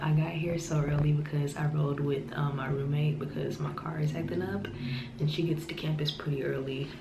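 hushed, quiet whisper.

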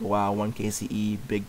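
slow, drawn-out, sarcastic drawl. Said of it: "he's all sarcastic".

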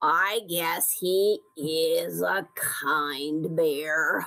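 very low, very slow grumbling. Narrator reads Badger's reply after the animals praise Bear: grumbling. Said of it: "grumbled Badger".

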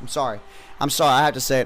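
normal talking voice

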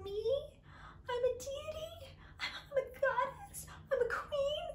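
very high, small, whimpering mock whiny voice. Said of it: "so whiny".

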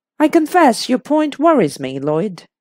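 ordinary delivery

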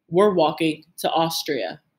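plain

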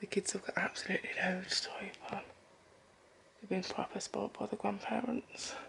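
speaking softly in a whisper. Speaker filming the laid-out presents so Lemire doesn't wake up, whispering. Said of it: "I'm whispering just in case Lemire wakes up".

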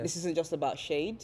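usual speaking voice

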